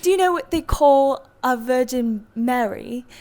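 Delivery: slow, unhurried, put-on British accent. Retelling what the man with the beverage cart asked: imitating a british accent. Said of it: "I'm gonna mess up my accent".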